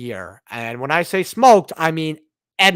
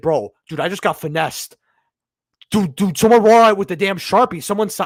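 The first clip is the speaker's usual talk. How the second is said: mild half-yell, held back; 4 semitones higher than usual. Retelling a reaction to a card drawn during a game: imitating own past yelling. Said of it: "I started yelling".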